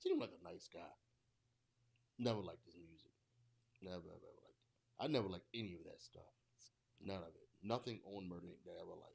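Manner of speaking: sour, bitter, resentful, grudging rant. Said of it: "why you sound so bitter?".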